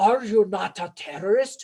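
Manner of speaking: attempted Russian accent in a bad-guy style. Quoting Adrian Rabikov questioning a general in a movie, in Adrian Rabikov's Russian accent. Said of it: "let's see if I can say it with a Russian accent".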